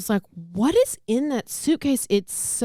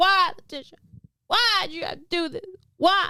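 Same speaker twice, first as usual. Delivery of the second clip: mock very high, disbelieving, shocked pleading; 9 semitones higher than usual. Retelling a trial, the speaker mimics the woman's brother on the stand, imitating shocked disbelief. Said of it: "and that's exactly what he sounded like".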